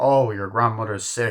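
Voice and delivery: put-on cocky tone. Retelling a line from the film's uncle: imitating a cocky uncle. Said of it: "how cocky the uncle is".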